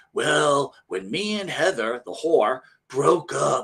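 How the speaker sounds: fake, grovelling radio announcer voice. Mocking a man on air answering a caller, imitating his grovelly fake radio voice. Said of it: "he uses that stupid grovelly voice".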